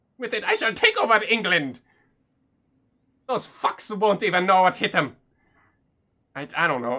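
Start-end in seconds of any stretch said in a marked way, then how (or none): 0.2-5.2 put-on Scottish accent, higher pitch. Going on about a villain's kilt device plan, the speaker switches to: put-on scottish accent. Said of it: "I need to flow into Scottish".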